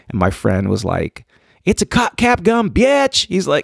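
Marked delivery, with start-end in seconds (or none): 1.6-3.2 play-acted very high-pitched, stretched-out holler. Retelling being stopped by police, quoting a friend, retelling a friend's yell. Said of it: "And he's yelling".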